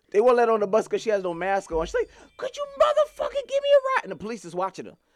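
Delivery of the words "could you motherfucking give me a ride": very high-pitched, frantic, freaked-out screaming. Retelling a woman in Toronto on the floor after the bus left her, imitating her screaming. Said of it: "she's on the floor screaming like".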